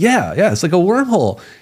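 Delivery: mock thrilled eagerness. Retelling a guest's reply about wormholes: imitating someone super excited. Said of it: "Lou Elizondo gets super excited".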